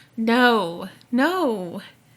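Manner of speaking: put-on moan. Telling a story of a frightening moment, you act out what you moaned then, imitating a moan. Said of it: "in that creepy demon Gollum voice".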